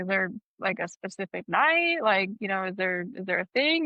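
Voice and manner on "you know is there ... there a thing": ordinary talk, nothing marked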